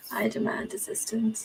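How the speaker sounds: soft, secretive, hushed whisper.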